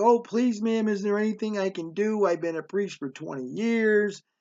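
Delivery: put-on pitiful, pleading-sounding voice. Retelling a story, the speaker quotes a priest pleading with a mother, imitating a pitiful voice. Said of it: "this guy had this pitiful voice".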